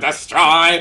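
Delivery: loud, high killer-machine robot shout. Describing the little machines on a show: Dalek voice. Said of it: "these little machines that just go".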